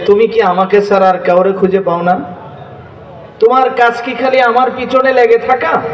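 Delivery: ordinary delivery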